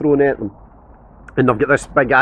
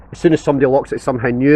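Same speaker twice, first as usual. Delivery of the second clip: usual speaking voice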